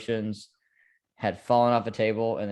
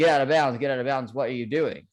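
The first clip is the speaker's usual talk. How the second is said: mock, shouting, pleading tone; 4 semitones higher than usual. A Vikings fan recalls watching a playoff game: retelling shouting at the TV. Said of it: "I'm shouting at the T V".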